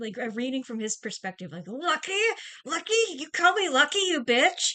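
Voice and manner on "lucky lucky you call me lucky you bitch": high, loud, full-on furious, enraged outburst. Reading a character's thoughts at someone he is angry with: imitating a character's rage. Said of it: "so full of rage at her".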